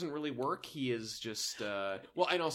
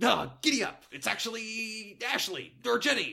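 bad neighbour voice, very high, loud, slow, drawn out; 10 semitones higher, 6 dB louder than usual. Acting out a neighbor bursting through the door: Kramer impression. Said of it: "My Kramer impression".

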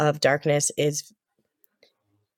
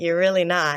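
ordinary talk, nothing marked

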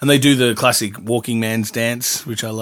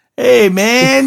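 put-on very high, loud, non-nasal, whiny stoned-sounding voice; 13 semitones higher, 8 dB louder than usual. Recalling a stoned character in Weird Science: imitating Anthony Michael Hall's whiny stoned voice. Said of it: "He's got that whiny voice".

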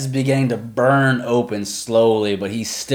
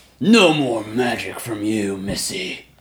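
very slow, taunting orc voice. Voicing an orc who is in a player's face: orc voice. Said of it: "the orc's looking at you".

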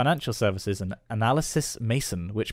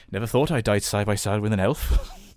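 put-on Welsh-accented dwarf warrior voice; 2 semitones lower than usual. Talking to listeners, quoting Gimli's line in a Welsh-accented Gimli voice. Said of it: "Welsh Gimli is".

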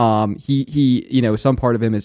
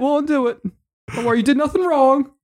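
shouting in a put-on voice, higher pitch; 14 semitones higher than usual. Playing a character pleading with a friend turned zombie: shouting in character. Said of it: "I'm just shouting".

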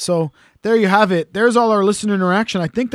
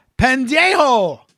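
high, slow, drawn-out yell of pendejo. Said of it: "I'd have to yell".

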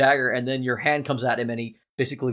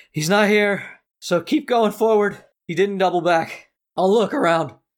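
panting, out of breath, much higher, slower; 7 semitones higher, 4 dB louder than usual. Running a game, voicing the slower pursuer stopped beside the players' hiding spot, panting pursuer. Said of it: "stopped and he's panting".

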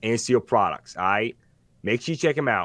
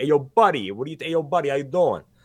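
put-on Brooklyn accent, hit hard; 3 semitones higher than usual. Showing the character voice used on the show, in a put-on Brooklyn accent. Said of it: "That was Brooklyn Borough President".

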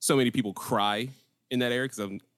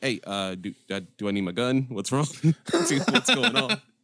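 put-on nervous man voice, higher and louder; 3 semitones higher, 5 dB louder than usual. Retelling the brother-in-law's questions when he got all nervous: imitating a nervous man. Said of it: "he got all nervous".

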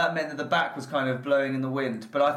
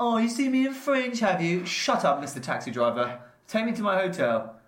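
slow, rude, badly done fake Russian accent; 4 semitones higher than usual. Retelling how the listener was really rude to a Moscow taxi driver, acting out the rudeness. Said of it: "you just were really rude to him".

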